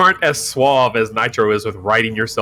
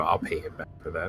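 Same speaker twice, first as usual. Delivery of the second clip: said under one's breath, lower and quieter; 6 semitones lower, 13 dB quieter than usual. Speaking in character as the coach leaves: muttered under breath. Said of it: "I was gonna say under my breath".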